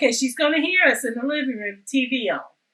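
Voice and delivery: ordinary talk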